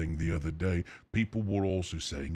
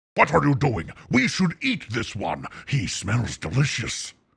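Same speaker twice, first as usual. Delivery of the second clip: loud, pitched-up voice with swooping pitch; 6 semitones higher, 7 dB louder than usual. Showing the voice used before: Venom voice. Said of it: "that one does sound like Venom".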